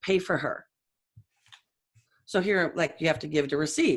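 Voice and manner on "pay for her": firm, authoritative, commanding tone of voice. Retelling a voice heard in the ear: imitating Jesus's low authoritative voice. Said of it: "'cause it was that low voice".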